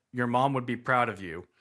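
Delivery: ordinary talk, nothing marked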